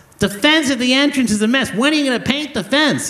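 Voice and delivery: mock very high, hostile yelling. Retelling a woman yelling at the board members, retelling her yelling. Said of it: "She's yelling".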